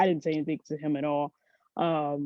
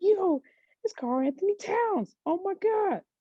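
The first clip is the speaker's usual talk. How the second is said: very high, excited yelling. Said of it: "yelling in his head".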